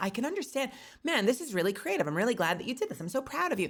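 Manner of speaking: mock overly tactful, super diplomatic, high and sing-song. Imitating own customer-service self praising someone's creation: imitating super diplomatic praise. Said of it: "tries to be super diplomatic and will be like".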